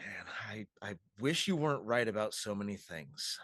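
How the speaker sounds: very low, private mutter under the breath. Voicing a character who stands and mutters about Scarlet: muttering under his breath. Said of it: "just kind of under his breath goes".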